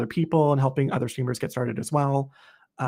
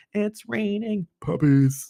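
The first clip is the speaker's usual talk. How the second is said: deliberately bad, higher synthetic robotic text-to-speech voice; 7 semitones higher than usual. Imitating the stream's puppy alert: imitating a text-to-speech voice. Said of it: "with a text-to-speech voice".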